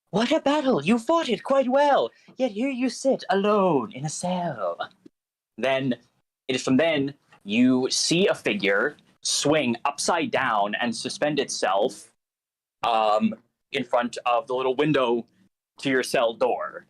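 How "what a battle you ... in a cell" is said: quiet, playful whisper, much higher. A voice from outside a prisoner's cell addresses the captive, quiet, playful whisper. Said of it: "a bit of a quiet, almost playful whisper".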